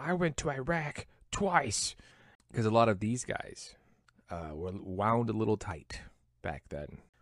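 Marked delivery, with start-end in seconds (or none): 0.0-1.9 play-acted raw scream, high and drawn out. Retelling a man screaming inches from a kid's face: retelling a scream. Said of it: "he's screaming".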